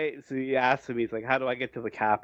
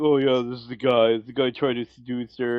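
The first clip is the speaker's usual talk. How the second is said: mock pouting, sulky voice.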